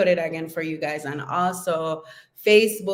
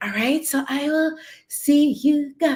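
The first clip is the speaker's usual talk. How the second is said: very high, glamorous starlet-style voice; 9 semitones higher than usual. Signing off to your listeners after talking about feminine energy, slip into your Marilyn Monroe voice. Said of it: "did my Marilyn Monroe voice just come in".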